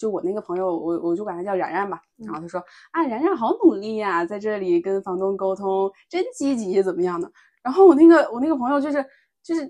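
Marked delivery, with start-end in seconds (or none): 3.1-7.3 snide, backhanded sarcasm with swooping tone. Retelling what a friend said while dealing with the landlord, imitating a sarcastic tone. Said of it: "然后你还跟我阴阳怪气".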